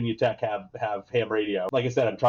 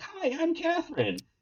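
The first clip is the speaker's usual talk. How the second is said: put-on soft, tiny, squeaky kid voice, very high; 5 dB quieter than usual. Retelling how a little kid introduced herself: squeaky voice imitating Catherine. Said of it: "this little squeaky kid comes up".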